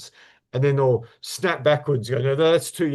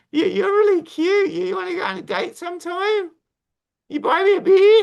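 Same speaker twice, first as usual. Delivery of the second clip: very high, loud, put-on Australian girl accent; 5 dB louder than usual. Acting out a girl from Instagram asking for a date, Australian girl voice. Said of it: "let me do my Australian girl voice".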